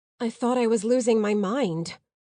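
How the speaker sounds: plain reading voice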